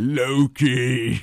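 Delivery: loud, grand superhero voice. Doing an impression of an Avenger: Thor impression. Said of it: "the one is Thor is, uh, is the best one".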